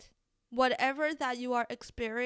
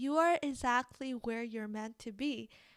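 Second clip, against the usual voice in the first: put-on beautiful yoga teacher voice. Quoting what the YouTube yoga teacher always says: yoga teacher's beautiful voice. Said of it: "she always say this in her beautiful voice".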